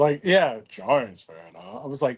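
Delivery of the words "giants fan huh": very deep, soft, put-on manly voice. Retelling what a man said to them, imitating his put-on man voice. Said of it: "got into like the man voice".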